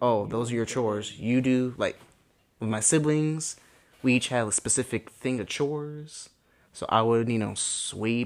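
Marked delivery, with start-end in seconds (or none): none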